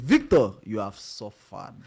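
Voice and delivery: put-on Nigerian accent. Saying a line the way a nigerian person says it: nigerian accent. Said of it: "let me say it the way Nigerian person say".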